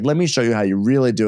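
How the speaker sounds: plain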